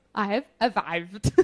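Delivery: soft put-on German accent, r of "arrived" as v. Speaker demonstrates doing a German accent by swapping R's for V's: put-on German accent. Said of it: "In order to do a German accent correctly".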